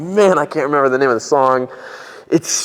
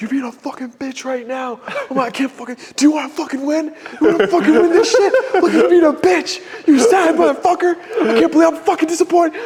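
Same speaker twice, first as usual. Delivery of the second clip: acted very high, shrill screaming. Retelling yelling at oneself in the car before the gym: imitating self yelling. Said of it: "scream and yell at myself".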